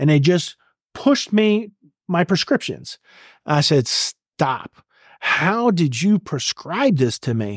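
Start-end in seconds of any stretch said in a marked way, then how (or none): 3.9-7.6 put-on, mock angry voice. Retelling confronting staff who handed over a prescription: retelling getting mad. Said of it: "And I'm getting mad".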